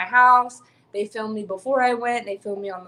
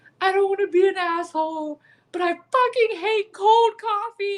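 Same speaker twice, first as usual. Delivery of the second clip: very high voice, sobbing through the words; 11 semitones higher than usual. Speaker retells breaking down in a car over cold coffee, imitating crying while upset. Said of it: "I'm crying, and I'm like".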